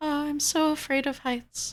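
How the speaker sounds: muttered aside, pitched high. Game master voicing Cho, overheard by two characters, speaking very quietly. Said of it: "she says this very quietly".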